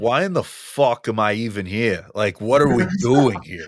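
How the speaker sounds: thick, heavily exaggerated New Jersey accent. Joking how they'd complain to the group, in a Tony Soprano New Jersey accent. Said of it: "the most like disgusting New Jersey accent".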